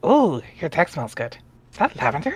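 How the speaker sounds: little gremlin creature voice. Performing a scene opposite a partner, told to give it the best gremlin. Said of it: "Give it your best gremlin".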